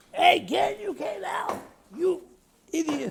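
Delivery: mock, very high, shrill yell. Retelling a man's story, imitating a woman yelling at him from a car. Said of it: "starts yelling".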